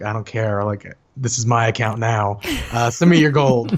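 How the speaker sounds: put-on smug, taunting spoiled-child voice. Retelling own past words after playing someone's characters: imitating own bratty taunt. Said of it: "I was a brat".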